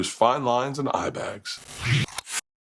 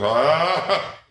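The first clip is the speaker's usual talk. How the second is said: loud, high-pitched gagging huh. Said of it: "taking turns crying and gagging".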